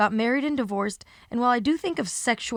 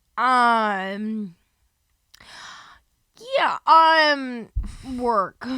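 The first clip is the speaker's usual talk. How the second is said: very slow, halting, hesitant speech with drawn-out um; 4 dB louder than usual. Retelling how Kendall answered a question, imitating Kendall's slow answer. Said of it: "It was just like it was so slow".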